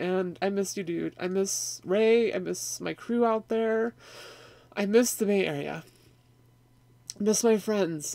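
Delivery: crying, tearful voice breaking through the words. Missing friends after reading a viewer's comment, crying. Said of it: "So sorry to cry".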